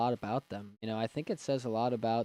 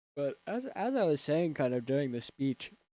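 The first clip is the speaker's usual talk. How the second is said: speech distorted by a yawn; 4 semitones higher than usual. Speaker keeps talking to listeners, yawning while talking. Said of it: "sorry, I'm yawning".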